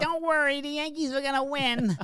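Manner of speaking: whiny high voice. Retelling what a baseball broadcaster said after the game: whiny Tim Kurkjian voice. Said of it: "He's got a whiny voice".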